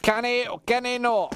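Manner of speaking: put-on Scottish accent. A commentator reads out a message, trying it in a Scottish accent. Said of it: "I'm normally really good at a Scottish accent".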